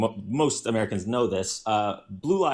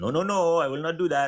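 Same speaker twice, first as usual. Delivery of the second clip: put-on French accent, pitched slightly higher; 7 semitones higher than usual. Retelling how a man drifted into an accent during his story about France, in a French accent. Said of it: "he did a French accent".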